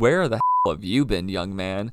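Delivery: ordinary talk, nothing marked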